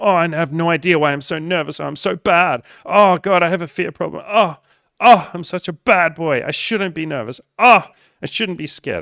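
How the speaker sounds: high, loud pleasure moans. Mocking listeners who enjoy beating themselves up: mock sexual moaning. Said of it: "that's you right now".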